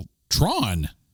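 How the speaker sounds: put-on straight, deadpan delivery. Retelling an anecdote, the speaker imitates Jeff Bridges's answer in mock straight deadpan. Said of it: "Just straight deadpan".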